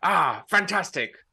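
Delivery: harsh cold voice. Voicing a Klingon cousin greeting someone: really rough, cold voice. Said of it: "it's a really rough, like, cold".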